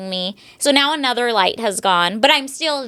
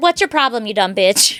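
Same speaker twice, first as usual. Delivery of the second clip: acted, fast, dead calm, unbothered delivery. Retelling rolling down the window to a woman losing her mind: retelling a super calm tone. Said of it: "super calm".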